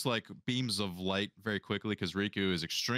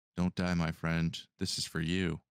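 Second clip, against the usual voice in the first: whispering; 3 semitones lower than usual. Voicing a character inspiring an ally: whispering in his ear. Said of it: "Riku whisper in your ear".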